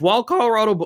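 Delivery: voice breaking. Announcing the next map in a match, mid-sentence, voice cracking. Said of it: "voice crack, pardon me".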